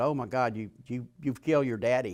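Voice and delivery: ordinary talk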